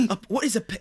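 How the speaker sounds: nervous, stumbling, narrator-like scripted reading. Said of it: "slightly different ways, but all of them wrong".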